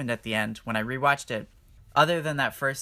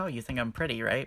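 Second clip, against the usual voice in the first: mock playful flirty teasing, quieter; 5 dB quieter than usual. Retelling what a film character says to him early on: imitating a playful flirt. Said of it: "she's being all playful with him".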